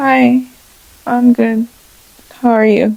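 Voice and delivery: slow, shy, reserved, withdrawn delivery. Role-playing a client greeting her: imitating a super quiet woman.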